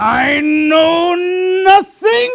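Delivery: shrill, very high, loud comic character voice. Retelling a parent dodging a question, as Sergeant Schultz. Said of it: "that was a perfect impression of those two people".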